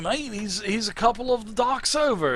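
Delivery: put-on horrible English accent. Voicing a character giving the players directions: horrible English accent. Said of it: "My English accent is just absolutely horrible".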